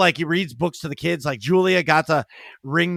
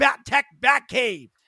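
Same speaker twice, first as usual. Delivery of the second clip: put-on child yelling at the top of his lungs, high-pitched; 8 semitones higher than usual. Retelling a child telling Santa his Christmas wish: imitating a child screaming. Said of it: "He screams".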